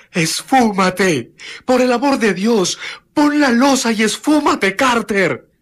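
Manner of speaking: pitiful, plaintive shout, very high pitched. Reading a story aloud, a trapped friend begs the other to flee: plaintive cry. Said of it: "se oyó un grito lastimero de Warren".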